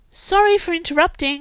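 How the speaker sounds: calling across the room, high. A woman hurries into the room past two people, calling out. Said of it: "Camilla called out".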